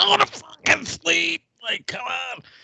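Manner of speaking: very high, raw, rough frustrated scream. Speaker recalls venting frustration over the kids, retelling a scream into a pillow. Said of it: "I'm screaming into a pillow".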